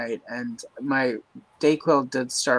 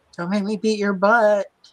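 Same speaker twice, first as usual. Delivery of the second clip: put-on high-pitched screaming yell; 8 semitones higher than usual. Retelling a woman on a livestream yelling at her kids, imitating her screaming. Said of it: "she's out there screaming at her kids".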